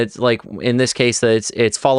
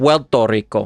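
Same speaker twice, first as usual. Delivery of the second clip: the R in Puerto said almost as L. Showing how a native Puerto Rican says it, Puerto Rican R sounding like L. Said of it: "if you listen to a native Puerto Rican, ... it's almost going to sound like this".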